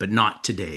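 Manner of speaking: low, quiet whisper. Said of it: "he'd whisper in my ear".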